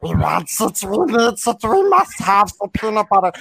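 high, pushed, creature-like voice. Showing off an impression while talking about peanut butter, Gollum voice. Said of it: "I do a pretty good Gollum".

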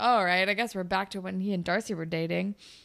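ordinary talk, nothing marked

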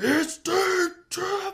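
deep put-on announcer voice. Recalling the announcer's walk-off home run call: deep-throated Kuiper impression. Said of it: "I can't even do a Kuiper impression when he just gets real deep".

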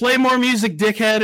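put-on loud, rowdy drunken yell. Retelling a drunk buddy yelling at the band's vocalist: imitating a drunken yell. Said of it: "he just yelled".

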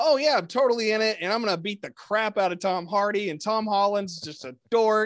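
loud, high, mock over-keen dripping sarcasm. Retelling what an actor said when asked a question, mock-sarcastic reply. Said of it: "he like sarcastically responded".

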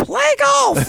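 put-on very high, creaky, squeaky little-kid shout. Imagining a kid brought out to the PA system, squeaky kid voice. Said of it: "You bring a squeaky voice kid out to the PA system".

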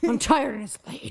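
growling, grumbling through the words. Retelling how a woman said it, growl the quote. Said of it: "She literally like growls it".

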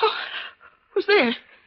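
frightened, startled voice. In a drama just before dawn, a character startled by someone arriving calls out, frightened. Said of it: "for a moment I was frightened".

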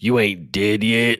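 mock-menacing, threatening put-on tone. A narrator quotes an anonymous caller's words, retelling a threatening tone. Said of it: "by a guy using a threatening tone".

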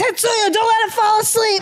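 shrill, very high-pitched, acted-out shout. Recalling a likely concussion, imitating dad yelling to keep the speaker awake. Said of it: "That was my dad yelling like".

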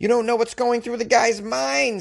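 put-on Boston accent. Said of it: "I slipped into this Boston accent".

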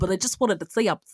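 bad, terrible put-on New York accent. Retelling what a cop said when he called in, in a terrible new york accent. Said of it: "I do a terrible New York accent".

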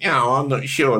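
mock-snooty dismissive tone. Retelling how the other person brushed off the show, in a mock-snooty dismissive tone. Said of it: "you're too highbrow to watch Sort Your Life Out".

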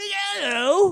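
high mock pirate voice.

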